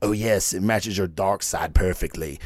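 very deep, bad emperor-style voice. Reading a comic book caption aloud, giving the reply in a Palpatine impersonation. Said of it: "That was my Palpatine impersonation".

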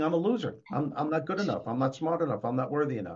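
ordinary talk

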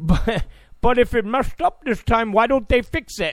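put-on Indian accent. Acting out a foreigner in another country asking a question, Indian voice. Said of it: "I know that's my Indian voice".

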